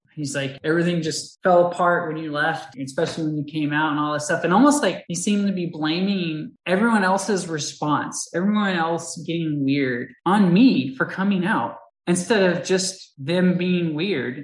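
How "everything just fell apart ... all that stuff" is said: usual speaking voice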